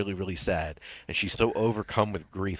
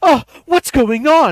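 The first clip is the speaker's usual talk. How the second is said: shrill, very high, very loud blurting; 16 dB louder than usual. Retelling what a woman in the theater front row said: imitating a woman in the theater audience. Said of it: "She's like".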